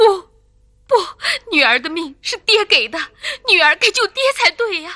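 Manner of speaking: loud, tearful crying, sobbing through the words. A daughter answering her father, crying. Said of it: "别哭了。".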